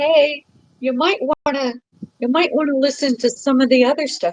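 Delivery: high, gentle, light scolding tone. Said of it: "I'm scolding you from over here going".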